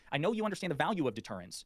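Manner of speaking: normal talking voice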